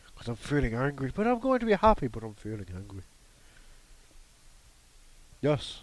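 put-on dog voice. Talking with someone, switching into a dog voice. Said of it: "I got to put on my dog voice now".

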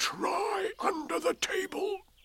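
high, loud stage whisper. Narrator reading a storybook character's line: loud whisper. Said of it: "said in a loud whisper".

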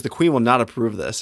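ordinary talk

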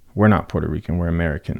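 normal talking voice

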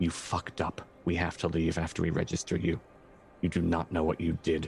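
muttered quietly under one's breath. Role-play character muttering to Lucian while leaving, under breath. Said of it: "and under my breath".

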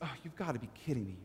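quiet, fed-up exasperation under the breath. Retelling how Jesus answers the questioners, rolling his eyes: eye-rolling exasperation. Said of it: "he just rolls his eyes".

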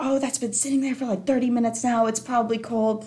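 long ranting complaint tone. Recounting a woman who went off about a waiting pizza order: retelling her going off. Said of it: "she just goes off saying".

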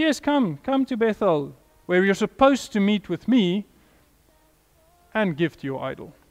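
heavy put-on sarcasm with falsely welcoming tone. Quoting God inviting the people to Bethel: imitating a sarcastic tone. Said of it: "God sarcastically says".

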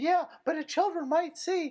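very high, squeaky cartoon voice. Parroting people who complain about the internet, in a Mickey Mouse voice. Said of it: "is my Mickey Mouse voice for some reason".

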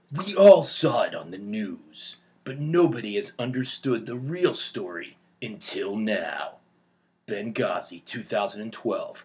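movie-trailer announcer, narrator voice. Asked for a trailer, the speaker performs one in a movie trailer voice. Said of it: "movie trailer voices".

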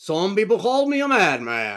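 drawn-out, deliberate, loud and slow delivery. Quoting a line from the film in the Mandarin voice. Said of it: "the Mandarin voice".

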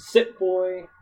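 high, yelled, cutting-in shout. Retelling how she stops him mid-attack: imitating someone yelling. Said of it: "and then she yells".

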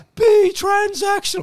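put-on saintly voice, very high and loud. Joking about a made-up commandment, the speaker quotes Jesus' last words: Jesus voice. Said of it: "That's my Jesus voice".

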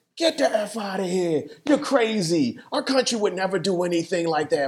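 put-on New York or Boston accent. Acting out how a listener would have reacted in late 2001, New York slash Boston accent. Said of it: "That's his New York accent slash Boston".

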